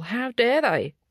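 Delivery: angry outburst. Speaking about the climate situation and protection of the status quo, angry, blood boiling. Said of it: "You can probably hear in the tone of my voice".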